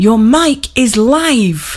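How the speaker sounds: slow hiss, "live" stretched long. A narrator reads a producer speaking through the studio glass, hissing. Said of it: "she hissed through the glass".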